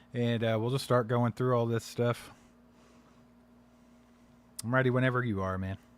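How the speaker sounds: unenthused, low-energy, uncaring delivery.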